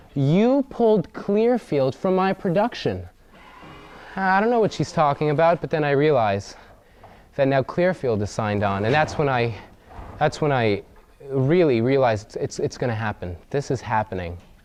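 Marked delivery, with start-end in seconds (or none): 0.2-3.1 high-pitched screaming outburst. Retelling a phone call where the caller is screaming: imitating someone screaming. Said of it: "she screams at me".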